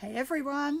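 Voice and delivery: hoarse, croaking voice. Greeting viewers live from a back garden, croaky voice. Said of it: "croaky voice".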